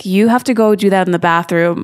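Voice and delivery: put-on sassy flight attendant voice. Retelling what a flight attendant told a passenger: imitating a sassy flight attendant. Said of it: "a very sassy flight attendant that was like".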